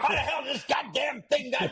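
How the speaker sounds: put-on high, loud, barked ranting, older man.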